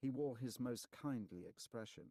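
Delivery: ordinary delivery, nothing marked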